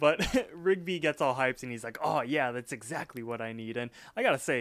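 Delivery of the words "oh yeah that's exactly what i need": put-on speaking with Russian accent. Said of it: "your Russian accent is pretty good".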